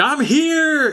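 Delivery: mock, very high, shrill shrieking scream. Retelling how a movie character arrives in the village: imitating someone screaming.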